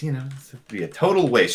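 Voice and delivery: muttered under the breath. Voicing an annoyed woman character in a game, muttering under her breath. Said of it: "She's kind of muttering under her breath".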